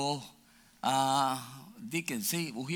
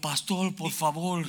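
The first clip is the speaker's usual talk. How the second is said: mock-frightened, endangered-sounding put-on scared voice; 3 semitones higher than usual. A pastor retells a young man's call for help, imitating a frightened voice. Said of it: "de peligro".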